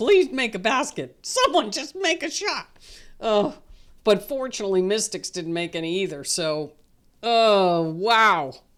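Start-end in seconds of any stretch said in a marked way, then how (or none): 0.0-2.7 mild, high-pitched yell. Retelling watching an ugly fourth quarter on tv: retelling own screaming. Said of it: "I was screaming at the T V".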